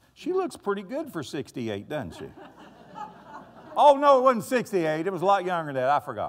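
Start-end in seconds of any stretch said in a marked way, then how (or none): 0.2-2.3 light, playful teasing with swooping sing-song. Speaker tells the audience about Angie's birthday while she is there, teasing. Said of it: "I'm teasing you".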